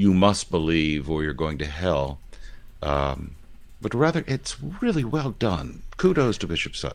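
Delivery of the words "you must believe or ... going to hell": usual speaking voice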